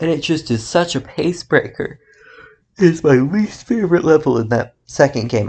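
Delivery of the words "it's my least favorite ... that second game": words stretched by a yawn. Playing a game at almost two a.m., yawning while speaking. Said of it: "I'm yawning".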